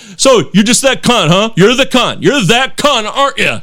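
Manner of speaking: play-acted hostile, aggressive, needling and goading jeer. Retelling what a driver shouted out his window: imitating an aggressive driver. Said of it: "this guy was very aggressive".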